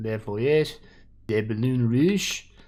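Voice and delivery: terrible fake French accent. Reading out a french title during a commentary, knowing the accent is poor. terrible french accent. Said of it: "That's not a good French accent".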